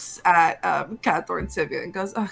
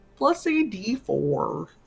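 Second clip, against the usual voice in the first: very slow, goofy put-on frog voice. Asking a player for a survival check: vaguely Kermit the Frog voice. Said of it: "I liked the voice you were doing".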